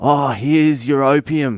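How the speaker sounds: put-on, loud, high, drawn-out yell at full lungs. Retelling yelling at a sketchy guy while walking out: imitating himself yelling loudly. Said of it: "I yell at the top of my voice".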